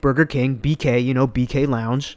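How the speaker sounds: ordinary talk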